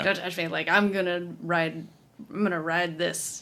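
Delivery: ordinary talk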